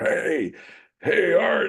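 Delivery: grizzled, gravelly trucker voice. Recalling a grizzled woman trucker, the speaker imitates her gravelly, smoky voice. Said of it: "gravelly voiced woman who's a grizzled trucker".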